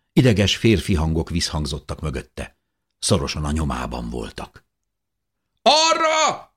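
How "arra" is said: very high, loud, stretched-out, drawn-out shout. One of the nervous men chasing close behind shouts. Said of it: "kiáltotta az egyikük".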